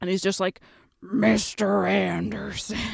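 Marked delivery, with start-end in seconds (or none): 1.0-2.8 really gravelly, raspy, grinding, rough voice. Speaker retells a movie's final battle, quoting Neo's opponent in a really gravelly voice. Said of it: "his voice gets really gravelly".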